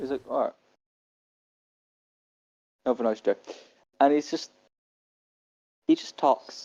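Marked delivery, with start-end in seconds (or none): 0.3-3.4 exasperated, done-with-it, fed-up voice. Voicing the bartender who is dismissing a player: fed up bartender. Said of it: "he's just fed up with Nyx's shit".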